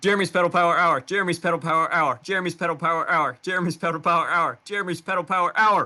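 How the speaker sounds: rapid-fire, very fast, rattled-off delivery. After a countdown, saying the show segment's name five times, as a fast tongue twister. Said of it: "Five times fast".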